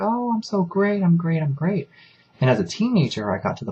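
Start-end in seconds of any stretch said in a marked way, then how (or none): 0.0-1.9 very high, gushing, fake cheerful tone. Retelling church greetings after parents argued: imitating mom's fake cheerfulness. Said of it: "my mom would be like".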